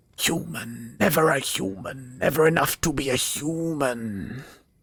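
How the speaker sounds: high, wispy, hissing creature half-whisper, "human" drawn out. Narrating to players, voicing a being heard in their minds, in a hissing, wispy voice. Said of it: "you hear this hissing, almost wispy voice".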